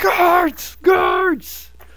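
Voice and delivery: screaming, high-pitched and loud.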